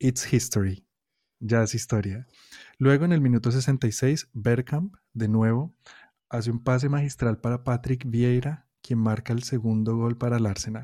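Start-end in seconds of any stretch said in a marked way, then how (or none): 0.0-0.9 put-on English accent. Retelling football commentators' call of an equalising goal, in an English accent. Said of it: "con mi mejor acento inglés".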